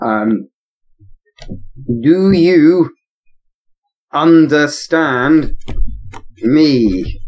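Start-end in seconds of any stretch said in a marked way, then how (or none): 2.0-7.2 very slow speech, "me" stretched out. A player's character addressing someone in the game, speaking very slowly. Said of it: "I'm gonna speak very slowly, like uh, how those awful English tourists do".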